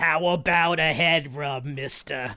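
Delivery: small gravelly goblin voice. Showing how a character named Lily should sound: little chain-smoking goblin voice. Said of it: "is probably how I would choose for Lily to sound".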